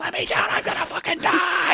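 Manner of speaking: terrified, panicked, pleading scream. Retelling being up high and screaming at the guys below, retelling a scream. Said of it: "I'm screaming I'm screaming at them".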